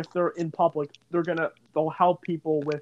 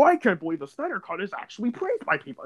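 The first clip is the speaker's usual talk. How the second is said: rough, animated put-on actor voice with swooping pitch; 3 semitones higher than usual. Mustering up an impression during a chat: J.K. Simmons impression. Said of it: "I can try to muster up a J.K. Simmons impression".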